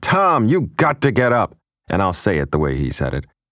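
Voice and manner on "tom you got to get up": primal scream, high and drawn-out. Retelling how his father screamed at his brother in the night, reenacting a scream. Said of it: "He's screaming at his brother".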